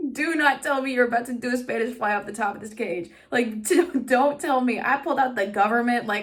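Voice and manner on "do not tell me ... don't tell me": put-on frantic, urgent pleading, screaming but contained. Retelling a reaction to a risky wrestling move: imitating herself screaming. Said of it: "screaming at Will".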